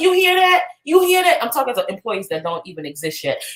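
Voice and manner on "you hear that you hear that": very high-pitched excited screaming. Recalling setting a monthly income goal, re-enacting own screaming. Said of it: "And I'm screaming and I'm like".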